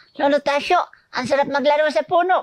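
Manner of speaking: put-on squeaky, very high small-child voice. Acting out a radio horror story's child character: child character voice. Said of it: "ginagaya ko siya".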